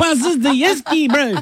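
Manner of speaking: high, loud Kiwi accent.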